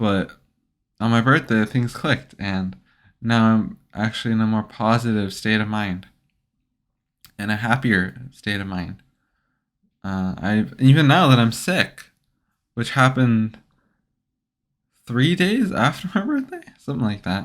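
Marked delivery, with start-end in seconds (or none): 15.1-16.6 voice cracking and breaking up. Speaker who is sick talks about their mood lately, voice cracking. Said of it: "I think my voice just cracked".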